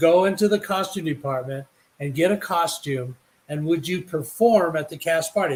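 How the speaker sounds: ordinary delivery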